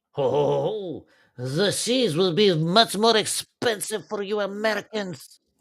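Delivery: clumsy put-on French accent, slow, drawn-out oh. A line addressed to Americans, in a bad put-on French accent. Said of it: "that's not a good French accent, is it?".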